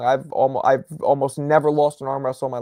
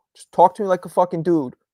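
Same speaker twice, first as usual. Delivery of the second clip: usual speaking voice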